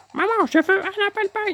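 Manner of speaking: very high, botched cartoon character voice. Retrying the line in a Cartman voice. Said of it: "je n'arrive pas à avoir la voix de Cartman".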